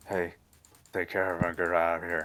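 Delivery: weak, badly put-on southern drawl. Narrator voicing Mason Galt looking up from the computer: bad southern drawl as Mason Galt. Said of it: "my southern drawl needs work".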